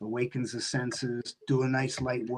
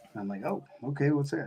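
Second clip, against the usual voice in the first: usual speaking voice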